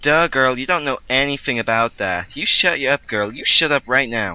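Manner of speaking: put-on valley girl accent. Trying out the Valley Girl stereotype after being shown: put-on Valley Girl voice. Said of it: "You gotta be all like".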